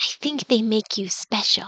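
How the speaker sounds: soft, hushed whisper, close to the ear. Voicing a character who leans to your ear, whispering. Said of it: "she kind of whispers into your ear".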